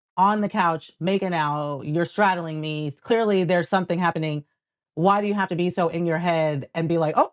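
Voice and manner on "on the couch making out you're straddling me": usual speaking voice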